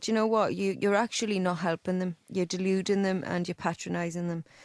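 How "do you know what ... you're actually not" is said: ordinary delivery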